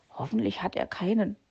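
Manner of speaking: muttering under breath. A sick character murmurs to himself after his helper leaves to find tea. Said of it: "murmelte Herr Fuchs in sich hinein".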